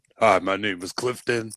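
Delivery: deep voice, dropped way down low. Recalling when the listener first came over, the speaker is imitating Clifton's deep voice. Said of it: "It was so deep".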